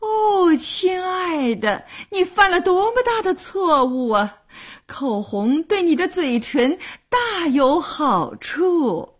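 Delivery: high, drawn-out, fussy crying out with great fuss. On learning the listener never uses lipstick, fussy exclamation. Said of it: "又大惊小怪地叫道".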